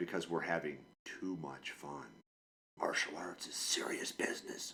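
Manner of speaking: sarcastic put-on serious tone. Joking about parents who pulled kids from fun classes: sarcastic mock seriousness. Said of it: "I'm being sarcastic here".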